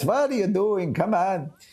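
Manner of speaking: joking mock voice, pitched way up.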